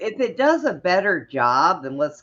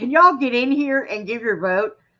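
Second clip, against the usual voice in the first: mock hollering, high-pitched yell; 8 semitones higher than usual. Picturing being stuck watching the slow Senate floor: acting out an imagined yell. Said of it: "I would be sitting there yelling".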